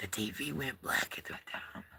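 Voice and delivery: soft, hushed whisper. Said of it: "I don't know why I'm whispering".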